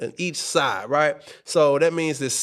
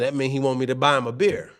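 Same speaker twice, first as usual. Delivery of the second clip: usual speaking voice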